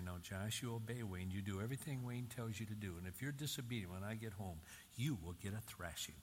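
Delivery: ordinary delivery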